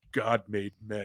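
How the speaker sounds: smug, self-pleased delivery, savoring the line. Retelling a movie scene after a shooting, smug Steven Seagal line.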